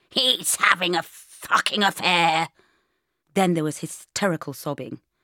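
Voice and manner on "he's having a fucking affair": small, plummy, sheep-like bleat, loud and slow. A narrator reads a voice heard over a door intercom, in a small posh bleating voice. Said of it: "A wee posh sheep voice bleated".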